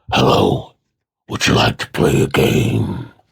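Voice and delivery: creepy horror villain voice, very low and rough. Speaker starts his first bit of the week with a Saw impression. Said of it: "a very good little uh, impression".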